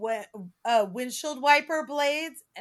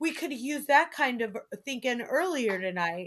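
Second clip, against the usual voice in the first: ordinary talk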